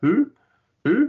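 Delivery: high, owl-like hooting of who. Talking about a movie's many named people, the speaker hoots like an owl. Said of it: "I'm going to sound like a bloody owl".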